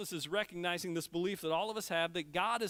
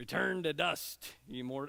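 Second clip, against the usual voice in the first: guttural pirate accent, much slower; 3 semitones lower than usual. Reading a verse aloud, the speaker slips into a guttural pirate accent. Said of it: "That's just the way I find myself saying that".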